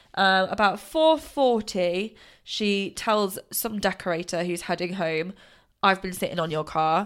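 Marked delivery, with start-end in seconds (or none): 5.9-7.1 put-on Brighton accent. Retelling a girl's words to a decorator, attempted Brighton accent. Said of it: "I can't do a Brighton accent".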